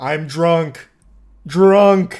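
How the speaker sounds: loud, primitive caveman speech in single words. Recounting a drunk driver case, imitating Wayne like a caveman. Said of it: "Speaking like a caveman with like one word".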